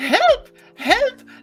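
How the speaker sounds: put-on shrill, screeching scream in an elderly woman voice. Imagining someone calling for help, a shrill old-lady scream. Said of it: "screaming in the most shrill old lady voice".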